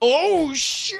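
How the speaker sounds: put-on loud exclamation. Retelling what dad yelled in the crowd: imitating dad's loud exclamation. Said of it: "I just hear my dad's voice in my head".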